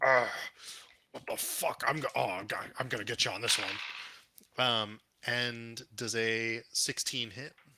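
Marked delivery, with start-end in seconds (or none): 0.0-4.6 snarling, growling voice. A game master voicing a foe with a bleeding nose, snarling growl. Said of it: "he snarls and growls and goes".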